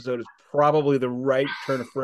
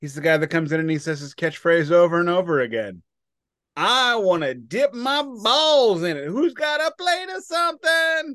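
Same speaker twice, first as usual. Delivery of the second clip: yelling, higher pitch; 5 semitones higher than usual. Describing a guy who keeps repeating his catchphrase, yelling. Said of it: "I'm yelling. I don't need to be yelling".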